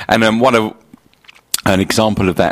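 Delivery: stuttering, stumbling, halting start, tripping over words. Telling listeners about birthday cake baking, stuttering over words. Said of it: "I'm stuttering over my words here".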